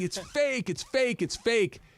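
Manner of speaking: play-acted, high, repeated yelling. Telling a prank story, acting out the man's buddies: retelling buddies yelling. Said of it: "And his buddies are yelling".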